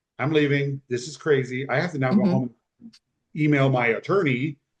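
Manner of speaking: ordinary talk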